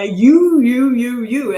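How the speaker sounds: mock, very loud, drawn-out, pointed accusing tone. Acting out the accusing tone a wife hears from her husband: imitating an accusing tone. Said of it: "I hear an accusation ... I hear that tone of voice".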